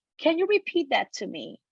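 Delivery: ordinary delivery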